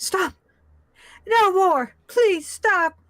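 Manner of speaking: frenzied man's voice. Narrating what the players start hearing in the smoke: frantic man's voice. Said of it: "a very frantic voice of what you would think is a man".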